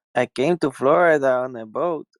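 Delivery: put-on Mexican accent on English words. Answering if they have been to Florida: put-on Mexican accent. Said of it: "that's a Mexican accent".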